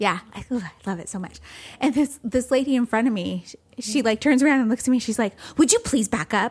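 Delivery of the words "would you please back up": pushy, confrontational, aggressive, demanding tone. Retelling a stranger in line demanding space: imitating someone aggressive. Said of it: "she was super aggressive about it".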